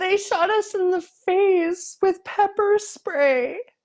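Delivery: put-on very high, teary, feel-sorry-for-me voice. Mocking a Trumper's TikTok, mock-teary feel-sorry-for-me voice. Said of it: "it was like so so teary and so like feel sorry for me".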